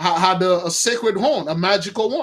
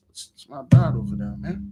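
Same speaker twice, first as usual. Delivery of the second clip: play-acted sorrowful, hurt, very sad whisper; 7 semitones lower, 4 dB quieter than usual. The speaker retells Jonathan's words on seeing Saul, imitating a very sad voice. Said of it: "with a very sad voice".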